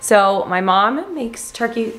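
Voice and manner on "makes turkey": voice breaking and cracking mid-line. Speaker warming up a big bowl of soup while talking, voice cracking. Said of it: "my voice just cracked".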